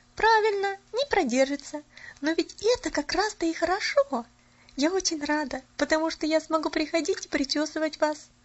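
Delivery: high, cheerful, merry twittering chirp. Polyana answers Miss Snow, chirping merrily. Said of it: "весело защебетала Поляна".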